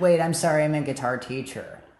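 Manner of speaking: put-on, crappy-sounding tomboyish voice. Retelling what someone said two seconds later, Cece Sheffield's shitty tomboy tone. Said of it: "in a shitty tomboy tone of voice".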